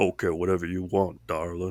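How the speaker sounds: soft voice stretching down to a low pitch. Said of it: "real bad [name] impressions".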